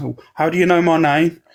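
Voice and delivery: panicked delivery. Retelling a clip where an interviewed man answers: imitating a panicky reply. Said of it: "he's all panicky".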